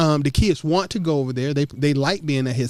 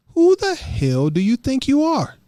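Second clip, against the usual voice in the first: very high, swooping, sing-song cartoon voice; 10 semitones higher than usual. Recounting what grinds their gears, Family Guy style: Stewie Griffin voice. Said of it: "in the voice of Stewie Griffin".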